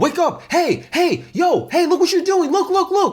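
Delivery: put-on urgent pleading, pitched very high. Retelling how the other players' characters called out: imitating urgent calls. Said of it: "Everyone has a sense of urgency".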